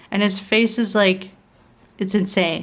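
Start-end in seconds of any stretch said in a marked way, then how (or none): none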